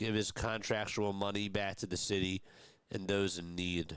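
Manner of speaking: plain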